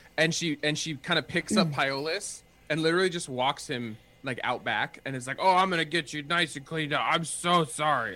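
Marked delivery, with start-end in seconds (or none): 5.4-8.2 put-on, acted minotaur voice. Narrating a scene, speaking as the minotaur who picks up Pyolus, in a minotaur impersonation. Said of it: "impersonation of a minotaur".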